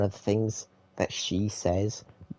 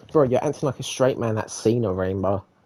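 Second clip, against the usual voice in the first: ordinary talk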